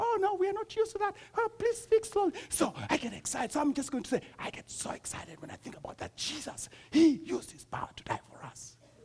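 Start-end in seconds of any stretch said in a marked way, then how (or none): 0.0-2.3 mock very high, scared, pleading voice. Retelling how listeners react to a raised voice: imitating scared listeners. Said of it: "I raise my voice and you guys are like".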